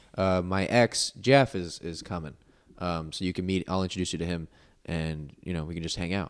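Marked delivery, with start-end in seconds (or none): none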